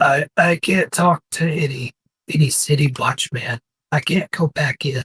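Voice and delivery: put-on monster orc character voice. Narrating a scene, the speaker voices a character answering Blinken in an imitation orc voice. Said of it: "in this imitation of an orc's voice".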